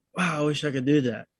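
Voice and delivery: ordinary delivery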